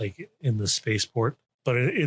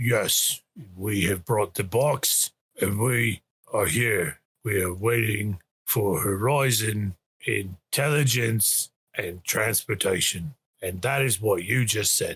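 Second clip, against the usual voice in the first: modulated, helmet-like trooper-style voice. Voicing the one carrying the box as he answers the group: stormtrooper-like modulated voice. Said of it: "that like stormtroopery sort of modulated voice".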